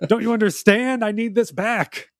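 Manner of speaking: upset, frantic, freaking-out blurt, high-pitched. Retelling a story about a wooden mask, imitating someone freaking out. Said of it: "He's like upset and he's freaking out".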